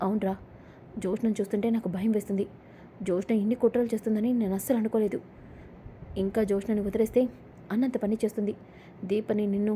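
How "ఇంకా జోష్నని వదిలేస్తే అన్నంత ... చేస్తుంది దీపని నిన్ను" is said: plain reading voice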